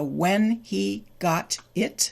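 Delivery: slow, careful, fully pronounced speech.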